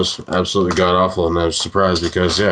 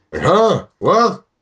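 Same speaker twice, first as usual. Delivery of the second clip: put-on elderly man, very high voice; 11 semitones higher than usual.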